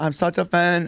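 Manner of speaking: put-on Filipino accent. Retelling a fan encounter, quoting an older Filipino woman; Filipino accent. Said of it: "going right down the middle of the uh, Filipino accent".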